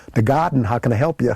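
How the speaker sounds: New Yorker style voice. Recalling answering the phone at the Beer Garden at twenty-one, New York accent. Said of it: "I used my New York accent when I answered the phone".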